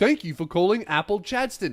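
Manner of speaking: robotic, automated recorded answering-machine style voice. Retelling calling a store, imitating a robot phone voice. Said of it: "a retail store have a robot answering the phone".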